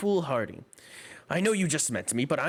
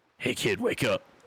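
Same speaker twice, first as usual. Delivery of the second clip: put-on rough, grizzled, gruff old man's voice; 2 semitones lower than usual. Describing the wake-up noise they like to hear, the speaker uses an old gruff man's voice. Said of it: "Just just an old old gruff man's voice".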